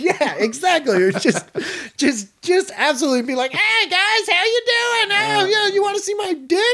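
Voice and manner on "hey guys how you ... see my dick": grating, very high, loud, irritating voice. Acting out a guy who makes everyone uncomfortable: imitating an irritating guy's voice. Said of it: "irritating voice with a personality to match it".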